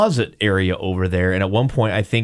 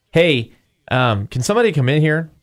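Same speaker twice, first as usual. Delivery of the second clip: mock-worried, startled, hesitant, uneasy call, pitched up; 6 semitones higher than usual. Retelling how a startled person called others in: imitating a startled, uneasy call. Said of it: "here were her exact words".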